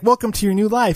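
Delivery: high, happy, cheery voice full of exclamation. Describing a video game's opening, voicing a cloaked guy's mock-cheerful welcome. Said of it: "all like happy and exclamation points".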